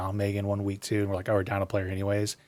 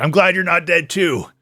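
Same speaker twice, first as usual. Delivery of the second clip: blurted out, very loud, pitched up; 9 semitones higher, 9 dB louder than usual. Imagining a character answering so everyone in the room hears: saying it very loud. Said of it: "he says it very loud".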